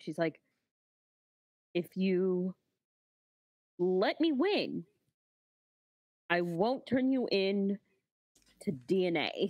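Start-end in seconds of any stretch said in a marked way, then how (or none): 1.7-9.5 hushed whisper, much slower. Her character leans down to the dinosaur she rides: whispering. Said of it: "She whispers down at it".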